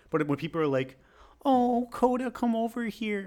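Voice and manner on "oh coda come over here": put-on drawn-out baby talk, very high and slow. Describing how people call the dog over, mimicking them in a puppy-talk voice. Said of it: "talking the puppy voice to them".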